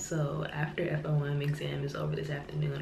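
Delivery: soft, hushed whisper.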